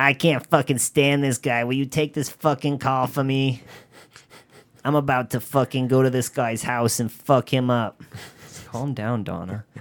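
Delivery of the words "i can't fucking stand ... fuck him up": put-on woman's voice with Boston accent. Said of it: "she talked like this".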